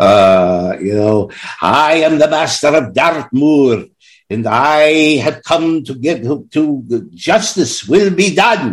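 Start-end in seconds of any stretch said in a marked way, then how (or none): 1.6-8.7 slight put-on Scottish accent, pitched up. Imitating an actor playing a prison master: imitating an attempted Scottish accent. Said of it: "he tried to get that Scottish accent in there".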